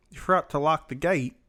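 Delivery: fake put-on British accent. Retelling a scene under review, voicing the wife's line in a put-on british accent. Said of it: "my British accent".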